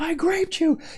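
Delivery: very high-pitched screaming at the top of lungs. Speaker retells trash talking during a team game, retelling own screamed trash talk. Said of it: "I was screaming to the top of my lungs".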